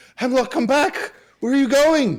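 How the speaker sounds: very loud, high calling shout. Running in after hemlock and calling out, shouting. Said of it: "and shouting".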